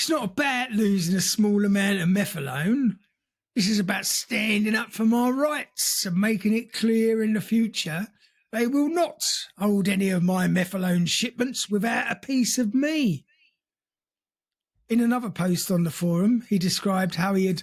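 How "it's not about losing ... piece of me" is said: put-on Cockney accent. Reading out a forum post in a put-on East End accent. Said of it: "Why is he speaking with an East End accent?".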